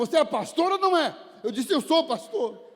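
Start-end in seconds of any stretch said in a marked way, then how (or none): 0.0-1.1 high, demanding, loud shout. A pastor recalls a man demanding whether he was a pastor: retelling a man's shout. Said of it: "Ele gritou comigo".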